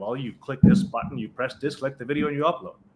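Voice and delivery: bored, rote, completely monotone, no enthusiasm. Demonstrating explaining an Instagram upload done many times, completely monotone. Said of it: "Completely monotone because I know it so well".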